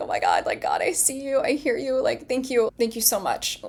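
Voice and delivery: tearful, crying, with swooping pitch. Retelling finding a coin as a sign and starting to cry: retelling tearful thanks. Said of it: "I start crying as I'm".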